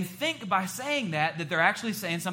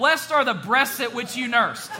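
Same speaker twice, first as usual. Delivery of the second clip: high, loud mock shout with a laugh. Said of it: "Please don't shout".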